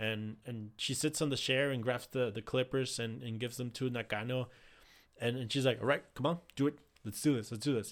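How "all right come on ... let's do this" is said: put-on cool, boss-like composure, confident and unfazed. Retelling a wrestler handing over the clippers: imitating Julia, taking it like a boss. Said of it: "taking it like a boss".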